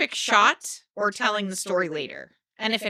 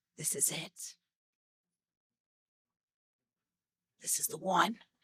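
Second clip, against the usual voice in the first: hushed, breathy, dramatic whisper; 3 semitones lower, 12 dB quieter than usual. Asking another speaker about moments before a hunt: imitating a dramatic whisper. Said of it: "dramatically whispered".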